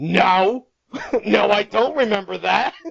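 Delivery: loud, stern, angry, rough voice. Retelling how a parent answered a request to go to dinner: mock-stern, angry voice. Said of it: "in the most stern, angry".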